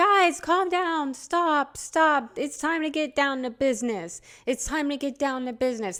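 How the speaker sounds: put-on screamed words, kept small, mildly strained yell. Retelling a speaker trying to calm a crowd: imitating Kamala Harris screaming. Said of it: "And she's screaming this".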